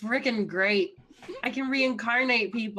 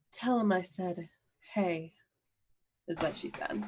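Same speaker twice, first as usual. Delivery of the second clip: put-on sexy voice, lower and quieter; 4 semitones lower, 6 dB quieter than usual. Passing on a greeting from Alyssa: sexy voice imitating Alyssa. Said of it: "That's a good sexy voice".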